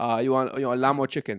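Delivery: put-on Turkish accent. Role-playing a kebab shop worker serving a customer: Turkish kebab man accent. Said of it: "the Turkish kebab man accent".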